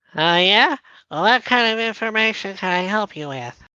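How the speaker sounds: high, revved-up goblin character voice. A player asks for information and the speaker answers as a goblin, in goblin voice. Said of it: "He's revving up the voice".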